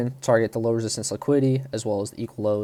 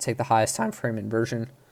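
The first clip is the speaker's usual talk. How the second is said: voice cracking and breaking; 3 dB quieter than usual. Explaining a five-minute trading setup, voice cracking. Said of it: "holy voice crack".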